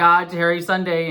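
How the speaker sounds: usual speaking voice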